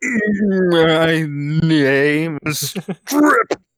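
very slow guttural voice with my stretched. Imagining Strip trying to talk for the first time, in guttural tones. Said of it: "came out in guttural tones".

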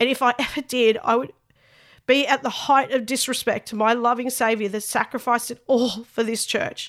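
tearful, choked-up voice catching with tears. Speaker addressing their church, tearful and choked up. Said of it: "I'm tearing up".

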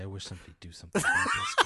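mock muttering under the breath. Telling a story, the speaker quotes a woman at the bar, retelling a mutter under breath. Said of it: "under her breath say".

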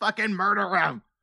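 acted-out, sudden, high screamed outburst. Recounting a movie fight scene, retelling a character's scream. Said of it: "And she just screams".

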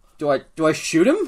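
high, loud, bewildered confused shout. Voicing a confused character calling to another: confused yell in character. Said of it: "she kinda yells to Roy".

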